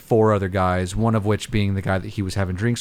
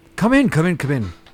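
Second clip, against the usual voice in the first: friendly, welcoming half-orc voice, pitched up; 7 semitones higher than usual. Voicing the half-orc owner welcoming the party in: welcoming half-orc owner voice. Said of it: "he welcomes you very, with a large, tusky smile".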